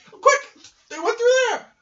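very high, very loud, squeaky tiny mouse yell. In a role-playing game, a player yells out in character, in a mouse voice. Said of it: "I didn't make a Mouse voice, but I did".

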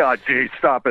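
ordinary talk

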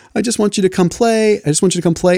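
mock very high, sobbing, tearful little kid voice. Retelling a son's plea to come and play: imitating a crying child. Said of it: "he starts breaking down and he cries".

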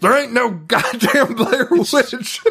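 shrieking, very high-pitched yell. Describing the sheriff's first scene, quoting him yelling at people: retelling a scream. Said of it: "He screams".

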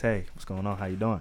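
very low, soft, hushed seductive murmur. Retelling answering a phone call: put-on sexy voice. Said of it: "I put on my sexy voice".

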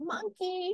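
mocking baby-talk voice, very high pitched.

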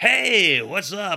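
radio announcer voice, pitched way up. Imagining randomly greeting people in Cleveland: radio announcer voice. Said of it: "our radio announcer voice".

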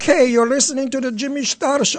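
failed, heavy put-on Scottish accent. Asked to say it in a heavy scottish accent, a failed heavy scottish accent. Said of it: "I still sound Chinese".

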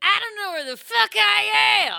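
very high, loud, rough, rasping stage-star voice. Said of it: "all I was doing was [name]'s voice".

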